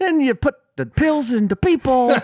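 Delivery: loud, very high-pitched voice. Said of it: "we still doing Cosby?".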